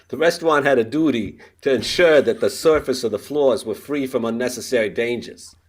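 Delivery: loud Boston accent, courtroom lawyer style. Reading a lawsuit aloud as asked: boston lawyer accent. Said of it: "can you just do that in that Boston accent of a lawyer".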